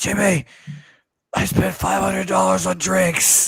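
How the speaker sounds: scratchy, ragged rasp. Retelling what a man said the next day, imitating a raspy voice. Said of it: "with like a raspy voice".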